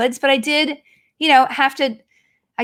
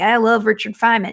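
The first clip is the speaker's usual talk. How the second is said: put-on country-boy accent, lower; 4 semitones lower than usual. Telling a story about a late grandpa, a nuclear physicist: imitating grandpa's country accent. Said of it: "he talked like this".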